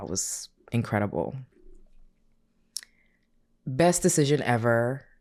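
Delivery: teary, emotional voice on the edge of tears. Speaker recalls their birthday gathering while tearing up. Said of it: "I'm tearing up now".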